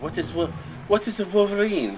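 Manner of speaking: fake Russian or Cuban accent. Quoting a guy from the movie Red Dawn: put-on Russian or Cuban accent. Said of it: "My best Russian accent, Cuban accent".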